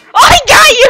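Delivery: high, loud, triumphant shout.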